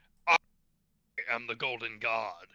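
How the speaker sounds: big, booming, thundering, loud voice. Telling Dennis what the Golden God will announce, booming Golden God voice. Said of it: "let out with a booming voice".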